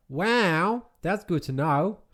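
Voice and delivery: put-on high Australian accent, "wow" drawn long. Responding to a request to do the wow in an Australian accent. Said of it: "Can you do the wow in a uh, Australian accent?".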